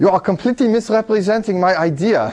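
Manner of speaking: clumsy, shaky put-on English accent. Answering as if Alan Turing were calling: bad Alan Turing impression. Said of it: "what a bad imitation".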